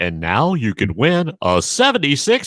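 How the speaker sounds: put-on 70s radio disc jockey announcer voice. Thanking someone who complimented the voice, doing a 70s radio DJ voice. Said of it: "So I need to punctuate that with a".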